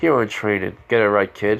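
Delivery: ordinary delivery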